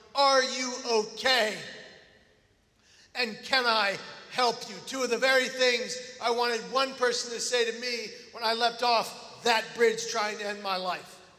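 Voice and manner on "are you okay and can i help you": slow, put-on gentle, kind, compassionate voice. Retelling what a woman asked a sister: imitating a kind, compassionate tone. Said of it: "in the most kind and compassionate tone".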